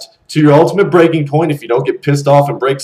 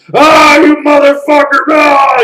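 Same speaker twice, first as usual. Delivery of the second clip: mock furious, very high, drawn-out, top-of-the-lungs scream; 12 semitones higher, 5 dB louder than usual. Acting out a guy pissed off at his girlfriend: screaming at the top of lungs. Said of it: "he's screaming at the top of his lungs".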